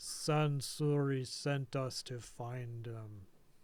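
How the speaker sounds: deep, slow put-on voice. Voicing the one whose mouth drops open as it speaks, very deep voice. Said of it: "but still very deep".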